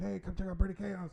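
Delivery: loud screamed delivery. Showing how to draw people over to the booth, screaming a sales pitch. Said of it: "I will literally start screaming like".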